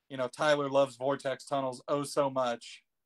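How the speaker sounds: ordinary talk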